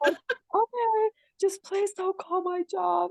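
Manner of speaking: slow, high, tearful begging through sobs. A mother retells her daughter's plea to her, imitating someone crying. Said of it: "she was like seriously crying".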